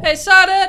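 put-on yelling. Imitating a friend stuck on an empty kiddie ride: imitating someone yelling at kids. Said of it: "yelling at little kids".

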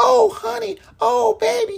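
very high-pitched, rough, creaky, rasping delivery. Show how an actress in Gone with the Wind would talk, in a high-pitched Butterfly McQueen voice. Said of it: "Her voice would be such a high".

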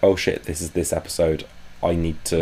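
normal talking voice

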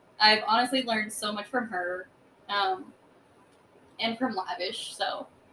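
sincere, moved, heartfelt, getting emotional. Talking about a woman the speaker loves and has learned from, getting emotional. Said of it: "I'm kind of getting emotional".

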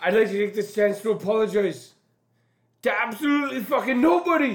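enthusiastic, high delivery with gusto. Told to go first with quotes, [name] does a Conor McGregor impression. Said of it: "keep giving me more Connor".

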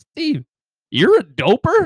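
feigned surprise. Retelling what a friend said to steve in front of his mom, feigned surprise. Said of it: "he like acts so surprised".

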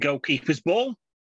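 acted shouting. Describing a comic strip, the speaker acts out Rick Stewart's shout.

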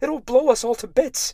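piercing, very high, loud shriek. Reading a first-person story, the narrator shrieks at a companion. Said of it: "I shrieked".

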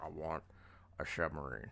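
bad, food-in-mouth voice, mouth full. Retelling how a film character asked for a submarine: terrible Sean Connery impression. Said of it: "that's a terrible impression".

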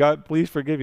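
put-on bawling, tearful, sobbing, desperate voice. Retelling a parable of a debtor on his knees: imitating tearful begging for mercy. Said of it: "he's on his knees begging for mercy".

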